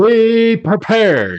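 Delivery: horrible put-on voice, shrill, loud. Quoting Cape Breton's favorite weather enthusiast: horrible Frankie McDonald impression. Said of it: "sorry about the horrible impression".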